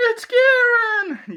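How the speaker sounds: very high, loud, drawn-out bad voice. Talking about spoiled character deaths in a game, in a bad character voice. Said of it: "That that was a bad voice".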